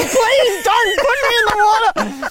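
put-on very high, small, begging child's voice. Retelling a child's first swim lesson: imitating Deaky pleading. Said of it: "he goes to pleading".

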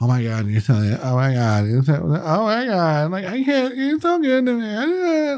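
acted, adoring, fawning, high, swooping gushing voice. Imitating the constant praise that strokes his ego: imitating gushing worship. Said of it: "the constant worship".

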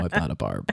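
voice sunk very low, bottomed out, very deep. Mimicking how the other person said their line, very deep, low voice. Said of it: "you said it like your voice dropped 10 octaves. You go".

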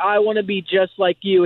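ordinary delivery

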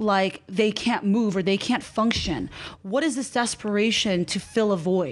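normal talking voice

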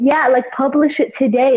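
plain

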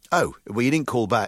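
ordinary talk, nothing marked

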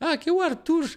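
put-on very high child voice. Retelling answering a call on the show, in a child's voice. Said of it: "Aí eu falei com a voz de criança".

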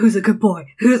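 put-on low whisper. Retelling a man heard in the hallway: imitating a man whispering to a dog. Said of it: "I heard a man whispering".

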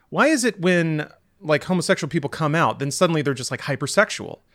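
ordinary delivery

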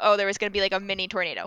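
ordinary talk

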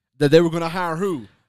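ordinary talk, nothing marked

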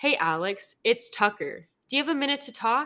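casual, relaxed put-on voice. Retelling a prank call by reading out the caller's lines: Tucker Carlson impression. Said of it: "It's a good impression".

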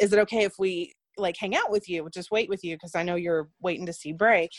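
ordinary talk, nothing marked

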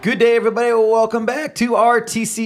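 breaking, cracking voice, up high. Podcast host opening the episode, voice cracking. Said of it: "my voice just cracked there".

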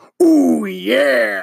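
raspy, high voice with long drawn-out yeah. Trying again after calling the first attempt embarrassing: Macho Man Randy Savage impression. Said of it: "a better Macho Man impression than that".

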